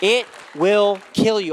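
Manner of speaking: loud, impassioned, fervent, passionate shouting. Speaker telling listeners the yelling comes from passion, not anger: passionate yelling. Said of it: "I'm yelling out of passion".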